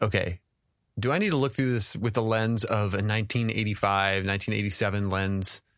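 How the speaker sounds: ordinary delivery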